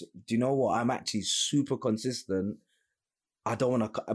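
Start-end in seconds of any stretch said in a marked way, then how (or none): none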